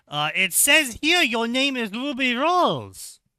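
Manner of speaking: bad put-on Chinese accent, loud and very high. Retelling what a man told them, the speaker uses a bad Chinese accent. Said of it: "Why are you doing a bad Chinese accent?".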